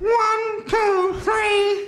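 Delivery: nasal voice. Demonstrating a voice exercise by counting to three, nasal voice. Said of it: "Let's just add a bit of nasal now".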